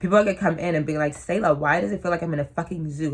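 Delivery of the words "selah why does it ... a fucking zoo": ordinary talk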